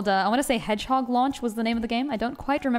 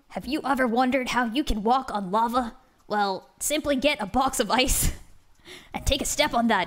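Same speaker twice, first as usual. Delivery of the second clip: clumsy, bad put-on sports announcer delivery. Doing a redeemed voice request, in a bad sports announcer voice. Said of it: "Is that how announcers sound?".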